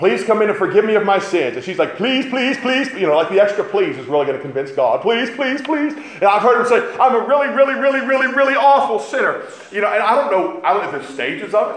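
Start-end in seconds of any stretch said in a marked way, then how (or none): 7.0-9.4 mocking, sarcastic put-on fervent voice, pitched up. Talking about how someone confesses in prayer, the speaker does a mocking imitation. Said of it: "I'm mocking now".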